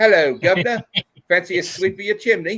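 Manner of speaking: high-pitched, badly done put-on English accent. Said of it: "ever try to do an English accent".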